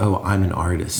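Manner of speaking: ordinary talk, nothing marked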